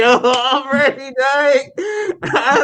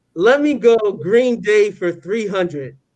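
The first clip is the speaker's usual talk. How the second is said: formal, official-sounding game-show voice; 3 semitones lower than usual. Player picking the next category in a Jeopardy-style game: official game-choice voice. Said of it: "I said that in my official voice".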